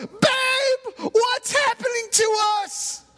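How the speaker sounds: very high panicked yell. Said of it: "And then he yells".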